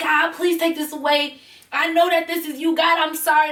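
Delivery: weeping, crying-out voice. Telling of kneeling in a bathroom with hives, imitating crying out to God. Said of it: "Like crying".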